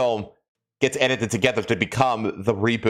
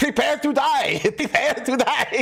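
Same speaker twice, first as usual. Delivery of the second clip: very high, very slow, drawn-out repeated yell. Acting out the movie scene where the character yells his line: imitating Inigo Montoya yelling. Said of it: "he keeps repeating it until he yells it".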